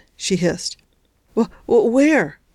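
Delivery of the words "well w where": teeth chattering, higher and slower. Narrator reading a man's reply to Denver as she pulls him along, teeth chattering. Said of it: "he chattered back".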